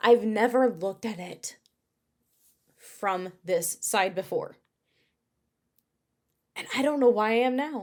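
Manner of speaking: a little moved. Speaker opening up about having grown, getting a little emotional. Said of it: "I'm getting a little emotional".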